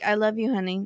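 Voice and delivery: put-on mumbling, unenthusiastic. Acting out a man mumbling to a woman who wants a kiss, imitating mumbling.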